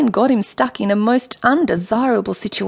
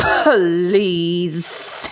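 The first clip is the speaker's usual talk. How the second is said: disgusted, spitting the P, hissing the S; 4 semitones lower than usual. The Sea Queen, hearing Michael's flattery, answers spitting the P in disgust. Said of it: "spitting the P and hissing the S as if she were disgusted".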